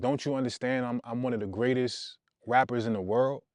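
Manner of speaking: ordinary talk, nothing marked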